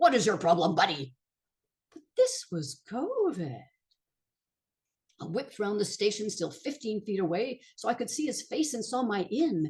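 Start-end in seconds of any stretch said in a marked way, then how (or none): 0.0-1.1 big booming voice, louder. Retelling confronting a man who was harming her friend, in a big voice. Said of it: "have a big voice".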